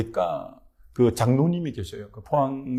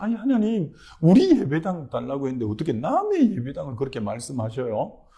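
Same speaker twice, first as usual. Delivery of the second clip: acted, indignant, protesting, complaining tone; 2 semitones higher than usual. Recounting a prayer, acting out arguing with God. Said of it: "하나님 앞에 막 그렇게 따지듯이".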